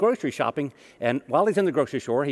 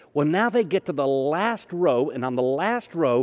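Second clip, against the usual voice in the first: ordinary talk, nothing marked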